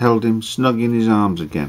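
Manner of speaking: plain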